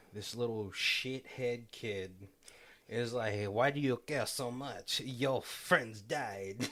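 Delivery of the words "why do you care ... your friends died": put-on clichéd French accent. Retelling a kid's line from a show: stereotypical French accent. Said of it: "my super like uh like stereotypical French voice".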